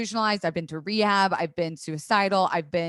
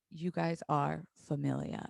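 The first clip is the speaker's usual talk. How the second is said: gravelly, creaking put-on voice; 3 semitones lower, 9 dB quieter than usual. Retelling what he said during an interview: Vin Diesel voice. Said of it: "his Vin Diesel voice".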